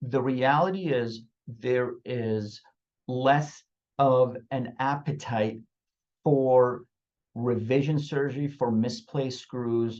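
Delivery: each word laid out very slowly, deliberate. Addressing everybody and wanting every listener to hear this: very slow. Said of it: "I'm going to say this very slowly".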